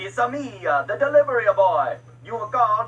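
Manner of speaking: put-on Italian accent. Playing the delivery boy, answering who he is, in an Italian accent. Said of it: "Italian accent".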